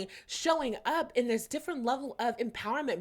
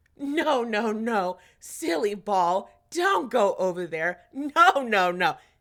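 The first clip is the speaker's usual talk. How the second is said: playful, lightly teasing tone with raised voice; 2 semitones lower, 7 dB louder than usual. Speaker retelling how they spoke to the ball, retelling a playful scolding. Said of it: "It was very playful".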